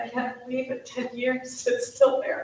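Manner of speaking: tearful, on the verge of tears. Telling a group about losing a husband ten years ago, tearing up. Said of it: "I'm gonna tear up just talking about it".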